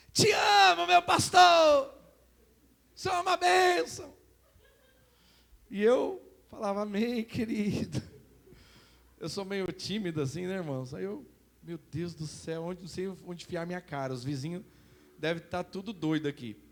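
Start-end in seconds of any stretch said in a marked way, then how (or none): 0.2-4.2 very loud, very high, rough, drawn-out shout. A pastor recalls a church brother shouting to him from the street, imitating someone shouting. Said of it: "lá de fora ele gritava assim".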